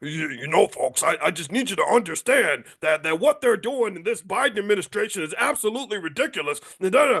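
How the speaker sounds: stretchy, rubbery voice with stretched words. Imitating how a public figure talks: Alex Jones impression. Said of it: "he talks like this. He has a rubber voice".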